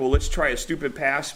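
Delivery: normal talking voice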